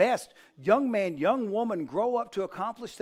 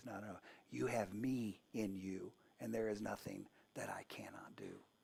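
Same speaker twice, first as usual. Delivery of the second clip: deep, hushed, very quiet whisper; 12 semitones lower, 16 dB quieter than usual. Speaker voices the Heavenly Father speaking in our ear: soft whisper. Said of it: "he whispers in our ear and he says".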